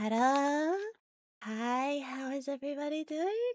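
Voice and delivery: very high, slow put-on voice. Recalling greeting viewers on early streams: higher-octave greeting voice. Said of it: "it's like a higher octave".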